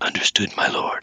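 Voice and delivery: sinister character whisper. Speaker recounting a scene, quoting the reply to Krug in Torg's sinister whisper. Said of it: "quite the sinister whisper that he has".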